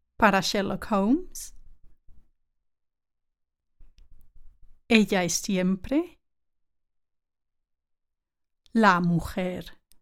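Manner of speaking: very slow, drawn-out, careful, deliberate Spanish. Speaker having listeners repeat a Spanish line after them, very slowly. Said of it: "Let's say it slowly".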